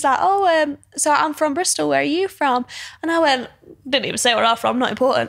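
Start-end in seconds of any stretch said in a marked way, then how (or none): 0.2-2.6 mock Cornish accent, higher pitch. Retelling what a man from Bristol said: imitating a slight Cornish accent. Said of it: "Cornish accent".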